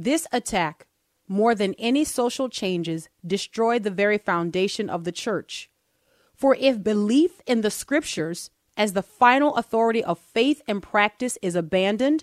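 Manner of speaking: careful, emphatic reading aloud, each word with care. Reading a passage aloud to listeners, the speaker reads it slowly. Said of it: "I'm going to read this slowly here".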